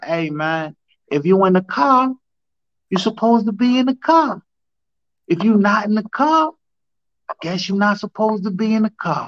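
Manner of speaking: put-on high Boston accent. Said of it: "he always told me in his Boston accent".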